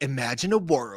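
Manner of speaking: epic, dramatic nineties movie-trailer narrator voice. Recalling old nineties intros: nineties movie trailer voiceover. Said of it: "voiceover, like, intros".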